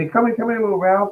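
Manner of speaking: tiny, small, high little voice. Describing a nice guy calling in his little dog, imitating his little voice. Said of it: "He got that little voice".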